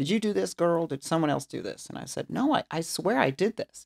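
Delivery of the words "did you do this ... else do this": thick, broad Texan drawl. Telling a story about a boss who doubted their work, the speaker quotes his questions in a Texas accent. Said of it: "his very Texas accent".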